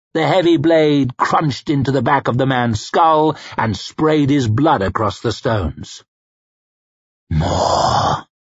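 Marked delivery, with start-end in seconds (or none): 7.3-8.2 hushed whisper under the breath. Narrator reads a man's line as he seeks his next kill: whispered. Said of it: "he whispered".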